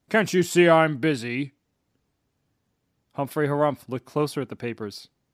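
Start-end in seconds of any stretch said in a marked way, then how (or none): 0.2-1.6 gruff, slow troll voice. Reading a story aloud, a troll under a stack of papers answers in a gruff voice. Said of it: "said a gruff voice".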